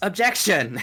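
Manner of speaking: high, loud, shouted. Voicing the lawyer in a court scene, shouting objection. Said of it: "I wanna say it just once".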